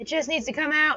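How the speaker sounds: loud, high, exasperated, frustrated yelling outburst. Speaker, fighting yarn that won't flow, addresses the listeners, frustrated yelling. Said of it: "Sorry to yell at you guys".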